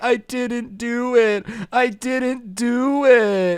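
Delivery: put-on play-acted, tearful child voice, high and very slow. Retelling the kid's denial to police: imitating a crying kid. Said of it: "the kid is just crying like".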